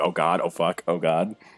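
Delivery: full-on, panicky freaking out. Voicing a character who hears a feared voice, freaking out. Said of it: "you see Needs basically freaking out".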